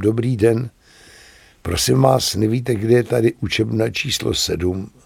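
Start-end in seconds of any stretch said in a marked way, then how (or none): none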